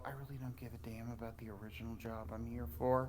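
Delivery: barely audible, very low half-whisper, rattled off quickly. In a group roleplay, a player voices their character, half-whispering as low as possible. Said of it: "I'm whispering this as low as humanly possible".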